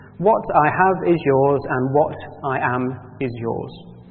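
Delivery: plain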